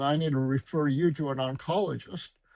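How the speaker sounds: normal talking voice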